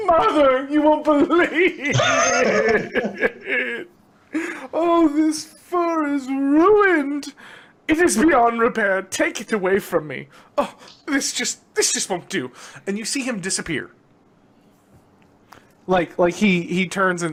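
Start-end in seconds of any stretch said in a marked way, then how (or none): 0.0-12.5 sulky pouting sobbing, higher. Voicing a tailor fleeing up the stairs over a ruined fur: pouting and crying. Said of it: "pouting and crying".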